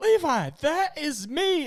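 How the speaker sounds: very slow, high, stretched-out yelling scream. Retelling a game, the speaker quotes Brandon after being shot, imitating Brandon screaming. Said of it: "and Brandon's screaming".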